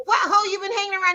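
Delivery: fed-up, accusing, angry, high-pitched voice. Retelling getting mad at a boyfriend over an eyebrow: imitating own angry words. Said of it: "I got mad at him 'cause I was like".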